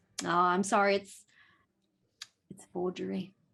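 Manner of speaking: sighing, sorry, apologetic and regretful letdown. Voicing a wine buyer who examines a bottle and declares it forged: sighing regretfully. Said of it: "kind of sighs and goes".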